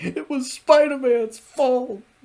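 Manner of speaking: terrified, very high and loud, near tears. Speaker recounts a favorite scene, quoting Hammerhead before his boss Silvermane: mock-terrified Hammerhead impression. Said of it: "He sounds terrified of".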